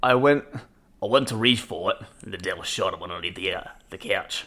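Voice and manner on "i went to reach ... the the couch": put-on Australian accent in a read-aloud tone. Reading a highlighted sentence aloud on request: Steve Irwin-style Australian accent. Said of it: "read this highlighted sentence here in your best Australian accent".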